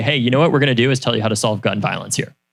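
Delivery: ordinary delivery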